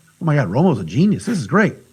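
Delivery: normal talking voice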